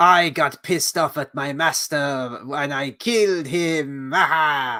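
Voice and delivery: put-on pseudo Russian European accent. Retelling a female character's line of dialogue, in a pseudo russian european accent. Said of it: "pseudo Russian European accent".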